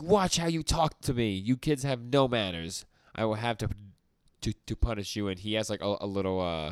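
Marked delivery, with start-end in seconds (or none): 0.0-5.3 put-on mild yell, scolding villain rant voice. Retelling a story scene where he scolds the others: imitating a character screaming. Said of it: "And he's screaming at them".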